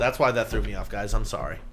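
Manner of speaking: plain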